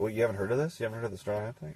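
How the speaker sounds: mock persuasive tone. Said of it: "were you trying to convince them?".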